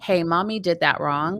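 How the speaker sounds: ordinary talk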